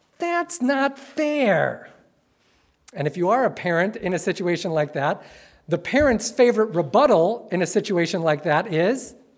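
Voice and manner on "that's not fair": high, whiny sing-song with long-drawn fair. Speaker showing an audience the inner urge to protest, in a whiny voice. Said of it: "to say with whiny voice".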